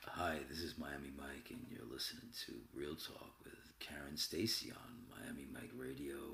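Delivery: very low, very soft, sultry DJ-style voice. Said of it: "Michael just did it for us".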